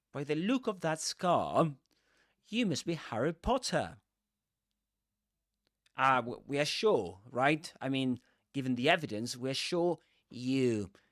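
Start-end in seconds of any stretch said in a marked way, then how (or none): 0.1-3.9 standard Southern British English accent, pitched up. Demonstrating how these characters say the line, in a standard southern british accent. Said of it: "they speak with a standard Southern British English accent".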